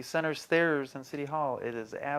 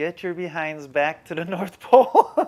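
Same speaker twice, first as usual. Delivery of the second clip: mock bossy, loud scolding scream; 3 semitones higher, 6 dB louder than usual. Relaying a phone call from Mrs. Claus to his partner, imitating Mrs. Claus screaming. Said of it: "she is screaming at us".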